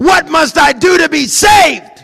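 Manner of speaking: very loud, high, full-throated, drawn-out scream. Acting out the jailer in a retelling: screaming out. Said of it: "and he screams out".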